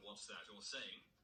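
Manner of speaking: usual speaking voice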